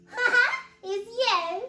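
very slow, high, loud, laughing through the words. Eddie, asked by the bear what's so funny, answers giggling. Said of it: "giggled Eddie".

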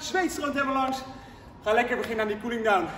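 winded, breathless voice. Instructor finishing a workout and starting the cool-down, out of breath. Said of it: "ik ben goed buiten adem".

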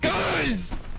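high screaming.

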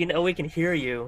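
normal talking voice

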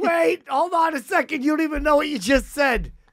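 startled shout, high-pitched and sharp.

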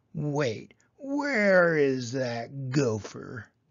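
slow, snarling voice. Narrator voicing Roy after he wakes to find his clover eaten: snarled. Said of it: "Then he froze and snarled".

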